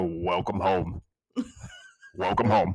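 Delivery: deep, swooping, sing-song put-on voice. Doing a co-host's voice after the others ask for it: Phil voice. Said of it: "you need to do your Phil voice".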